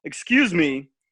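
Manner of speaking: commanding, authoritative voice. Speaker recreates how they addressed a lady and two girls, retelling a commanding tone. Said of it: "Let me try to recreate it... Like I commanded them".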